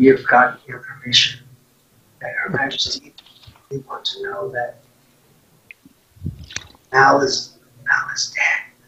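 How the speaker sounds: whispered aside in a butler voice. Game narrator speaking as the butler to a player, whispering.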